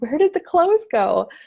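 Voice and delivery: play-acted shock, high pitch. Retelling finding the laundry gone from the bed: retelling own shocked question.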